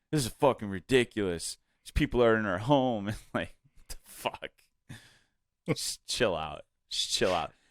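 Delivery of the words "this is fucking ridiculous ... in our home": irate, fed-up, angry ranting. Retelling an angry woman's complaint about the parade: imitating an angry complaint. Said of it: "She's just like".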